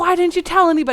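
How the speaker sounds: livid, furious, high-pitched voice with relief underneath. Retelling a dad scolding a child who vanished: imitating a furious dad. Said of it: "relieved, but also furious".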